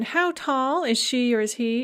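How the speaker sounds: normal talking voice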